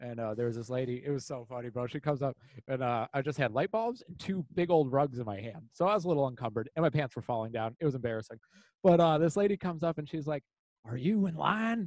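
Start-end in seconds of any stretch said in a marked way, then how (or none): 10.8-11.9 slow, classic Southern belle drawl. Retelling what a lady asked him while waiting in line, southern belle voice. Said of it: "that classic you Southern Belle sound to her".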